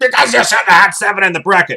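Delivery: mock indignant, irritated, high and angry. Reading out a viewer's comment about the bracket: imitating an angry comment. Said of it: "he says that all angry".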